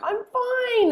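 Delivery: crying voice, pitched very high, tearful. Retelling standing there with tears rolling down, imitating saying it through tears. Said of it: "with tears rolling down my face".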